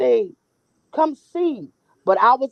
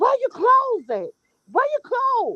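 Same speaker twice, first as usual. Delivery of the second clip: put-on frantic shrieking, very high pitched; 12 semitones higher than usual. Recounting finding a woman outside in the pouring rain with only a top: retelling own screaming. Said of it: "I started screaming".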